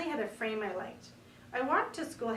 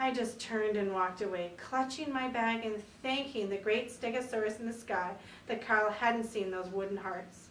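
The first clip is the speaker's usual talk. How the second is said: ordinary delivery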